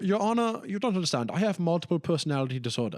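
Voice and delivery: put-on German accent. Acting out a clothing-empire owner pleading with the judge, german accent. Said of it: "It's German".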